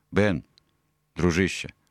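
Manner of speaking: ordinary delivery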